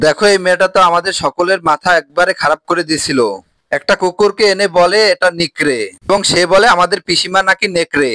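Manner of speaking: ordinary talk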